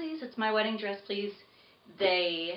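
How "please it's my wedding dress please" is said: plain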